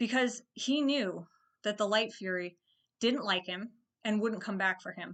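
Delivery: choked-up voice catching with emotion. Explaining why a film character's decision matters, getting choked up. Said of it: "I was getting a little choked up".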